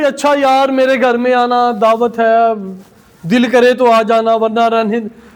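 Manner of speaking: listless, half-hearted, can't-be-bothered tone. Showing how someone gives a dinner invitation without heart, listless, half-hearted invitation. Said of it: "बड़ा मुर्दा दिल से".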